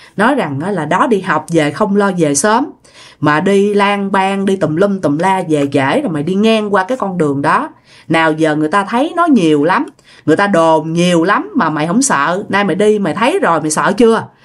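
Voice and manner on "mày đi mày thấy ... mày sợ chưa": ordinary talk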